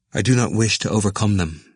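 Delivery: ordinary delivery, nothing marked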